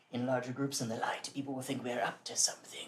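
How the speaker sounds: seedy, sleazy, shady-sounding voice. Voicing a cloaked hummingbird-headed man who greets the group: seedy-sounding voice. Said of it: "it sounds like the seediest shit".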